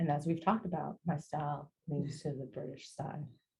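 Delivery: soft, hushed, very quiet, low voice. Talking with another speaker about personal clothing style: very quiet voice. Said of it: "That's the quietest I've ever heard you speak".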